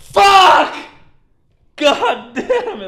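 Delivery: shrill, very loud, slow, drawn-out scream-crying. Speaker reenacts screaming at a TV show on their laptop, imitating own screaming. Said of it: "I just scream at my television show".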